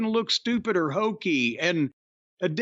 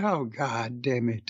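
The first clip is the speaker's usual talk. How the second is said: slow, dragged-out, spaced-out, distracted delivery; 8 semitones lower, 3 dB quieter than usual. Imitating a commentator fed up with his two partners: imitating Taz spacing out. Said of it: "he's spacing out in his head because he's like".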